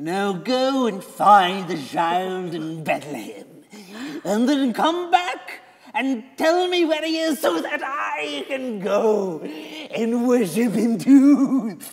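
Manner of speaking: mock creepy, sinister voice, slow and high. Retelling a man's instructions to find the child, imitating a creepy voice. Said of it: "all creepy-like".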